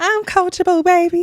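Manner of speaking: put-on, mock high-pitched voice. Repeating another speaker's line back, in a high-pitched voice. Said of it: "said a little the high pitched voice".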